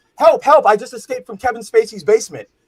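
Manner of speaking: hollered cry, high-pitched and loud. Speaker retells a Family Guy mall scene, Stewie yelling for help. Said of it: "he's yelling".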